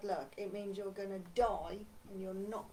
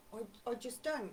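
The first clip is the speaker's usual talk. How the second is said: ordinary talk, nothing marked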